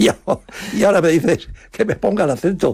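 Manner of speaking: high, laughing, indignant protesting tone.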